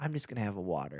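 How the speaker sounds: conspiratorial knowing tone. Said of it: "I say it in this tone".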